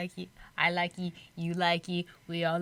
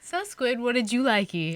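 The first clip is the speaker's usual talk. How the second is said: normal talking voice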